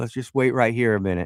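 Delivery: ordinary delivery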